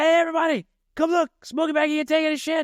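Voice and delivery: very high, squeaky character voice. Quoting a movie scene where Ezal sees Smokey taking shoes: imitating movie character Ezal. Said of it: "he sees Smokey taking his shoes. Like".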